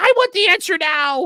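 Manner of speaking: high, loud, demanding mock voice. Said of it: "And she says".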